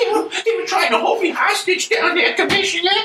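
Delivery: put-on little-kid voice. Telling the commissioner about being held hostage: little Timmy voice. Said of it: "I do that little Timmy voice".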